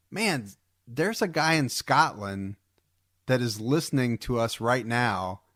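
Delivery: ordinary talk, nothing marked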